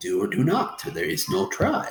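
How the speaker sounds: poorly done, swooping, put-on alien sage voice. Telling listeners to be like Yoda, terrible Yoda voice. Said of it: "terrible, terrible Yoda voice".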